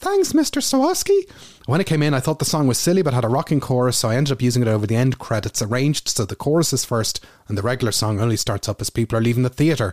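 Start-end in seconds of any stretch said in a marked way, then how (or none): 0.0-1.3 very high-pitched voice. Recalling their own voice going high on a phone call, high-pitched Mickey voice. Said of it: "My voice went high-pitched".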